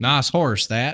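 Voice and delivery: clumsy, botched put-on Southern US accent. Mocking a performer's delivery, the speaker repeats the line in a bad southern accent. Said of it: "really bad Southern accent".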